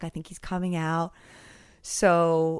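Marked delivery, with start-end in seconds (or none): 0.0-1.1 whispered. Recounting waiting first in line when someone whispered; whispered. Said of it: "someone whispered".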